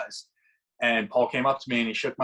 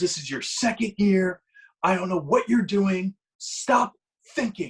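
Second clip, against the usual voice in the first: put-on screaming, higher; 8 semitones higher than usual. Retelling how an instructor screamed at him on the field: imitating someone screaming. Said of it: "He was screaming at me, top of his lungs".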